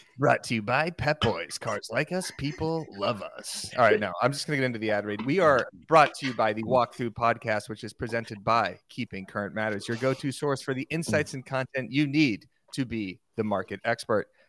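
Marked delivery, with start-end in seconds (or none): 0.2-3.7 slow sports broadcast announcer voice. Showing another host how to do the sponsor read, in an ESPN announcer voice. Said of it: "Do it like that".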